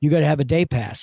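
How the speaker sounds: put-on tone full of attitude. Retelling what a park ranger said: imitating someone with an attitude. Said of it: "she came marching up with an attitude".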